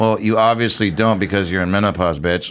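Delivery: ordinary delivery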